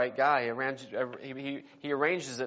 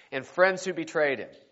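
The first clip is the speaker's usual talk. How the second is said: ordinary delivery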